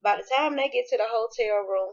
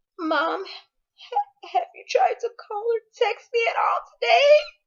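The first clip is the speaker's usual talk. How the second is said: very high, slow, tearful crying and sobbing; 14 semitones higher, 5 dB louder than usual. Retelling a son's tearful phone call to his mom: imitating someone crying on the phone. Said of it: "he sounded just like that".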